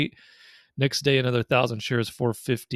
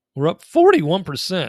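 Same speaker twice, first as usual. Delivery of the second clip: voice jumping up a bit in pitch, louder; 6 semitones higher, 8 dB louder than usual. Reading out the gain on a position: voice going up in pitch. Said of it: "Did your voice just go up a bit?".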